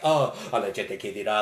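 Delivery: mock muttering under breath. Acting out a character's aside in a scene: Alcindoro muttering under his breath. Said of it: "under his breath is like".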